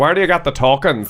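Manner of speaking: put-on northern English accent. Retelling a guy from the north at the arcade where the speaker worked: northern accent. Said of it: "I remember this guy from the north".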